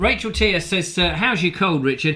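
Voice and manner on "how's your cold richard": usual speaking voice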